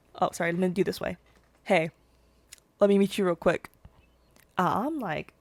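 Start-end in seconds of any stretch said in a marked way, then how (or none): 1.6-3.7 put-on forced-casual, nonchalant male tone. Retelling how a guy approached in a hallway: imitating a guy's nonchalant tone. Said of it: "This is him. He's like".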